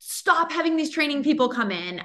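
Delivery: mock, high-pitched, half-shouted, demanding tone. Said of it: "yelled at them".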